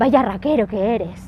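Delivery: absolute disdain, scornful and nasty. Showing how people in Santander call someone a raquero: with absolute disdain. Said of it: "And you say it like that, you know, with absolute disdain and, and horribleness in your voice".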